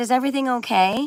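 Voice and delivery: calling out from afar. Retelling calling out to a man walking across the wooded part, retelling own yell. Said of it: "I yelled toward him".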